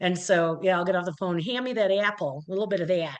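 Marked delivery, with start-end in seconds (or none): 1.4-2.4 Midwest accent laid on thicker. Retelling how they talk after a phone call with mom: thicker midwest accent. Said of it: "that's that Midwest accent".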